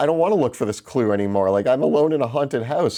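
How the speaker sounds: high, genuinely spooked, frightened voice. Retelling being alone in a haunted house: imitating being scared. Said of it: "just scared [name] with a lantern".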